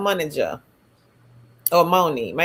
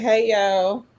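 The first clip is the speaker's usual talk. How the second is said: plain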